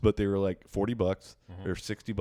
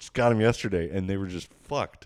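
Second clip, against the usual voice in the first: ordinary delivery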